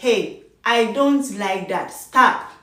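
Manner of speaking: firm, assertive voice. Showing how to tell someone to stop: firm voice. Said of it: "your voice like".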